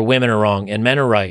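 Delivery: plain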